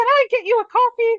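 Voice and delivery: very high, squeaky little mouse voice. Describing a funny image of a tiny mouse, in a high squeaky mouse voice. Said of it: "her high squeaky voice being like".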